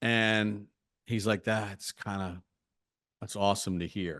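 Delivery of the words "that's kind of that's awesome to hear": put-on choked-up voice, much quieter. Quoting a man who got choked up on the phone, imitating choked-up speech. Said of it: "he got a little choked up on the phone".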